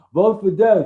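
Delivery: put-on Brooklyn accent. Retelling what a comic book shop owner said: imitating a brooklyn accent. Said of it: "hilarious Brooklyn, almost like Sopranos character".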